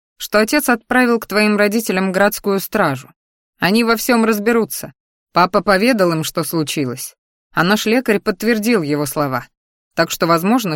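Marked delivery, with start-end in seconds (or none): none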